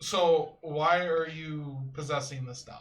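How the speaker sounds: loud, slow voice projected to carry far. Speaking to a possessed doll so the priest can hear: projecting voice loudly. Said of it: "trying to project my voice loudly".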